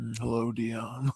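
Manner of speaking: low, soft, hushed, creepy voice. Trying out a new voice to mess with someone, creepy Buffalo Jeff voice. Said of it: "Is that creepy enough?".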